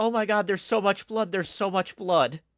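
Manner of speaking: frantic, terrified, high, loud panicked screaming. Retelling a tabletop gag, voicing the other of two people: retelling panicked screaming. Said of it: "the other one starts screaming".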